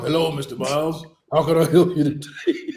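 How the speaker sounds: put-on gravelly voice. Acting out the woman who greets mister miles on arrival, gravel voice. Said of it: "with that gravel voice".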